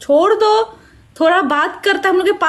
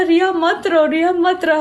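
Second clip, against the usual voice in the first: ordinary talk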